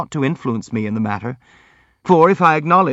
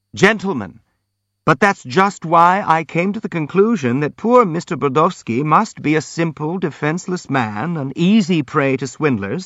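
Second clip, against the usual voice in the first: ordinary delivery, nothing marked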